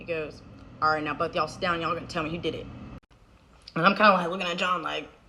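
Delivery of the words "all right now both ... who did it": low, menacingly calm, scary, fully in control. Retelling dad sitting both kids down: imitating dad's scary calm. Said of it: "he's scary 'cause he's really calm".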